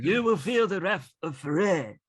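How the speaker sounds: put-on British accent. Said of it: "why are you putting a British accent on".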